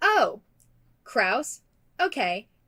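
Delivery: very sarcastic, swooping delivery. Retelling how someone reacted to hearing a full name: imitating a sarcastic tone. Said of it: "very sarcastically".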